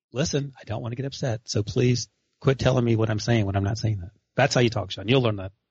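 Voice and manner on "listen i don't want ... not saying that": put-on soft, hushed angry half whisper, lower pitch. Retelling how to talk to angry kids without yelling: imitating own soft half whisper. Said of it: "I was in a soft voice".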